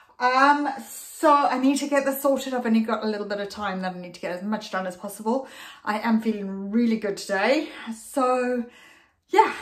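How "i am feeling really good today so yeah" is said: puffing, breathless, winded voice. Vlogger sorting out a messy space with little time, out of breath. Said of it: "except now I'm out of breath".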